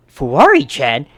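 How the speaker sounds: loud, shocked, stunned cry.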